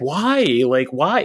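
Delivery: put-on small child getting really upset. Retelling a young son questioning a movie scene, imitating an upset child. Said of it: "getting really upset".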